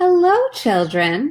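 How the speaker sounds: sweet, high, sweet-sounding voice. Reading a story aloud, someone greets the children in a sweet voice. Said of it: "someone said in a sweet voice".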